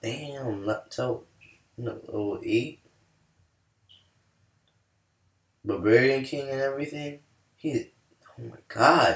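astonished, caught-off-guard reaction. A game streamer reacts to another player's level eight barbarian king: surprised. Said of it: "I'm sorry for sound so like surprised".

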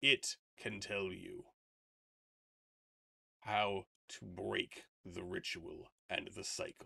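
rough, creaky voice of a wise, massive creature. Game master, in character as a giant creature, advises a player; giant creature character voice. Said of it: "The Kowaddle smiles. Spoken as a true paladin. It leans down its massive head and boops you on the forehead".

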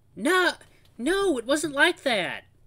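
put-on very high, very loud, drawn-out, cooing babyish whine. Reading a character who denies an accusation: babyish whine. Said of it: "says this in a babyish whine, practically a coo".

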